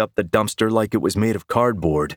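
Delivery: ordinary delivery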